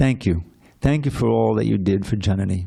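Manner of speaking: mock choked-up speech. Recounting a husband's thanks after the ceremony, the speaker retells it in a choked voice. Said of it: "he said in a choked voice".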